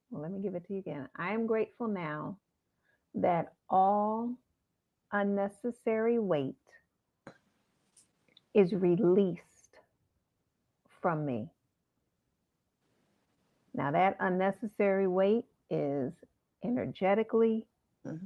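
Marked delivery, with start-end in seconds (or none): 1.1-11.5 slow, deliberate, halting, chant-like, broken into pieces. Giving listeners a mantra to repeat, said slowly. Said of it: "So I'm gonna say it slow".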